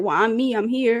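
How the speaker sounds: ordinary talk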